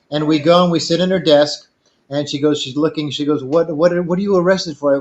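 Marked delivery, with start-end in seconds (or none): 3.4-4.9 put-on elderly woman's voice. Retelling what an old lady at a draft office said: imitating a little old lady. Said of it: "little old lady comes out".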